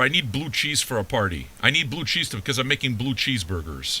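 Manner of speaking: usual speaking voice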